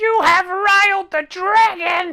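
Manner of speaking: shrill, shrieking, very high, loud voice. Game narrator voicing a voice the players hear, high-pitched shrieky voice. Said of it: "a very high pitched, shrieky voice that says".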